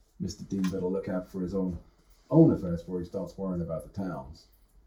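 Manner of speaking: very low, deep, very soft mutter, half under the breath. Narrating a scene, the speaker gives a rankled man's remark, muttering under his breath. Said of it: "mutters on half under his breath".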